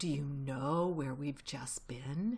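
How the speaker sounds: low, dark half-whisper. Mr. Fox, face close to Badger's, asks him where they've been: half-whispered darkly. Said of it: "whispered darkly".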